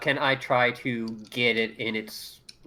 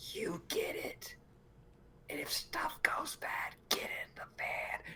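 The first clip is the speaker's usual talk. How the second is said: quiet whisper under the breath; 15 dB quieter than usual. Speaking to the group in character, in a hushed voice. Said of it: "I kind of put down to a hushed voice".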